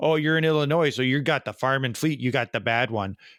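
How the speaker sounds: put-on Wisconsin accent. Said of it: "he's doing it in the Wisconsin accent".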